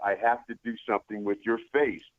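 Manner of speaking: ordinary delivery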